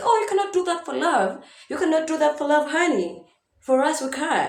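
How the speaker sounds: high, play-acted, critical scolding voice. Imitating people who attack her videos: imitating commenters attacking her. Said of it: "people don't come and attack me and be like".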